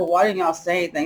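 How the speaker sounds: plain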